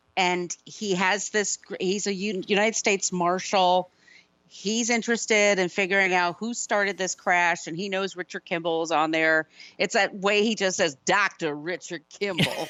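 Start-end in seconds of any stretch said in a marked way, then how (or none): 11.1-12.7 dropped low, said with utter disgust. Retelling how the United States Marshal says a name: imitating Tommy Lee Jones saying it with disgust. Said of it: "with such disgust".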